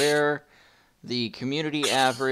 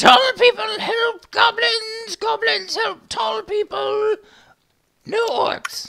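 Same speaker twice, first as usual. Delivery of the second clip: shrill, squealing, very high, loud goblin yell; 7 dB louder than usual. Voicing a goblin who yells back out: goblin yelling. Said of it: "he yells back out".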